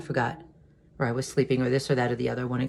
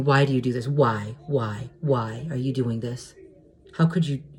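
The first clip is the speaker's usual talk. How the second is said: put-on screaming and wailing. Retelling an angry outburst at mom over dinner: retelling own screaming and wailing. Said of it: "I started screaming and wailing".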